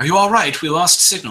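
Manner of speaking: very light, high voice creeping in. A voice returns into the players' heads after lost signal, very light voice. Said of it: "a very light voice creep back".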